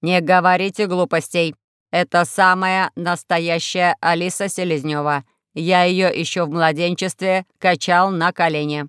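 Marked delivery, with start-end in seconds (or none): none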